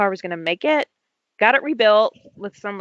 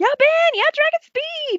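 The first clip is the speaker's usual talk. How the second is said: very high, thrilled, excited cheering. Retelling cheering at home for the finish: imitating own excited cheering. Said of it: "jumping up and down in my living room".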